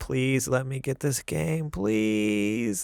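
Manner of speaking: mock begging, slow and drawn-out. Retelling how he begged to get a game over the monthly budget: retelling begging. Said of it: "I was literally like begging Trudy".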